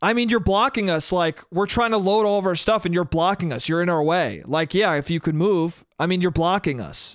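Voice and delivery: mock curt, put-out, rude, snippy voice. Retelling how a woman rudely answered an offer to move: imitating a rude snippy reply. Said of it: "with a vicious, shitty look and goes".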